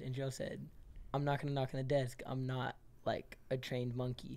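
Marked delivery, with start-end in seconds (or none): none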